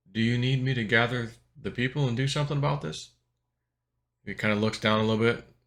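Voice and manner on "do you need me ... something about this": hushed, secretive stage whisper. Retelling a dream, quietly asking someone a question: retelling a half-whisper. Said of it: "So I whispered to him".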